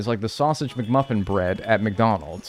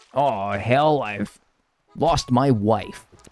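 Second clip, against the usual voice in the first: fake American accent from a British speaker. Showing how British people sound doing an American accent. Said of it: "what British people try to sound like when they're doing an American accent".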